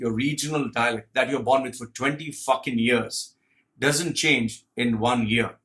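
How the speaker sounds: usual speaking voice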